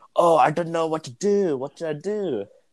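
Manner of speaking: put-on thick Lebanese accent. Quoting a man at the speaker's job, in his weird thick Lebanese accent. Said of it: "in his weird thick Lebanese accent".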